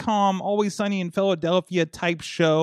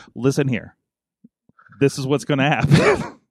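put-on, deep, stern, angry voice; 4 semitones lower, 4 dB louder than usual. Imitating the other speaker getting angry about bringing an iPad in, mimicking a deeper angry voice. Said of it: "Your voice gets deeper".

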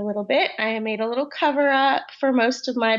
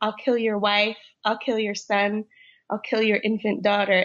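put-on creepy, menacing whisper. Retelling a threat an actor whispered to them: imitating a creepy whisper. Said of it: "he whispered to me what he says".

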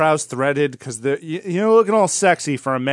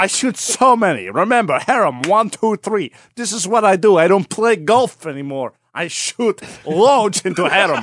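put-on Middle Eastern accent; 3 semitones higher than usual. Continuing the boastful king bit: put-on Middle Eastern accent. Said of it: "I can't do a Middle Eastern accent".

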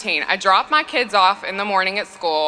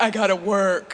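put-on, dopey, dim-witted man voice. Retelling how she imitated her husband's excuse, in a dumb husband voice. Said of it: "she did the dumb husband voice".

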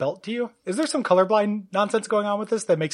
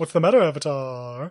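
low, taunting demon voice; 4 semitones lower than usual. Repeating the line after naming whose voice it was: Guardian voice. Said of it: "The Guardian, yeah".

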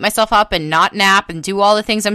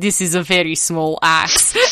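put-on Russian accent in English; 3 semitones lower than usual. Retelling a Russian story, voicing the man in it: put-on Russian accent. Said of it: "I'm giving him a Russian accent".

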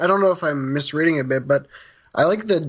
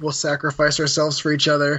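plain

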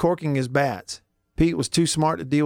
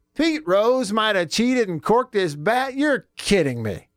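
sarcastic, pitched-up feigned disbelief; 7 semitones higher than usual. Reacting to a cheating story from the first hour: sarcastic fake surprise. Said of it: "there's a little more sarcasm for you".

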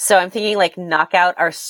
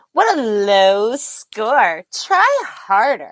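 put-on sing-song, taunting, jeering girl voice; 4 semitones higher than usual. Speaker quotes a pinball game's voice after the last ball drains, in a Pinball Champ 82 girl voice. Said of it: "the girl voice goes".

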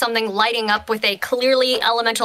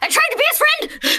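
very high-pitched, panicked burst. Acting out a character's line in a panic: panicked scream. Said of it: "In a panic, she screamed".

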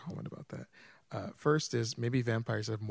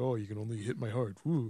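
put-on vampire voice. Joking about how vampires talk about their weak spot: imitating a vampire. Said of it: "I know that vampires have, like, this".

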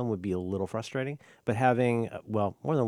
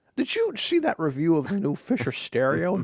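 put-on Scottish voice, higher and louder; 6 semitones higher, 4 dB louder than usual. Joking about an old magazine's stereo review: poor man's Sean Connery voice. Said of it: "I feel like you're a poor man's Sean Connery".

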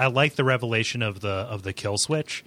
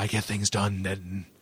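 put-on menacing villain voice, quieter; 3 semitones lower, 7 dB quieter than usual. Retelling a game character's reply to being called out: Walter Simons menacing answer. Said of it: "it's more like".

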